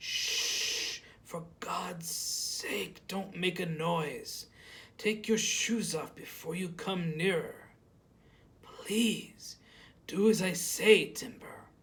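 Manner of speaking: slow, hoarse stage whisper, straining each word out. Narrator voicing Harry as he speaks to Timber, in Harry's strained whisper. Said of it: "It's on my stomach. The snake is lying there, asleep." / He was still speaking like he'd been shot in the stomach, and I could see him lying there on his back with a single sheet covering three-quarte".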